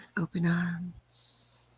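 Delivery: put-on sexy voice. Inviting Don to move here, joking: put-on sexy voice. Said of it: "you put your sexy voice on".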